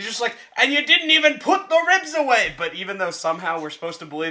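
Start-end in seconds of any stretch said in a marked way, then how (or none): 0.6-2.5 angry, very high-pitched rant full of rage. Retelling a chef's outburst on a kitchen show: angry Gordon Ramsay impression. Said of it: "Why does he sound Irish?".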